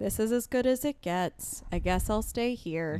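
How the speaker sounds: gloomy, mopey cartoon donkey voice. Talking about settling in dating, the speaker voices that thought: Eeyore voice. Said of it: "Kind of said with an Eeyore voice".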